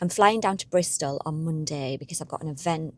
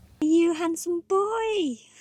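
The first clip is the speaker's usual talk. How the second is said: higher, louder pet-talk dog voice; 13 semitones higher, 3 dB louder than usual. Greeting a freshly groomed dog, talking in a dog voice. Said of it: "Excuse the dog voice".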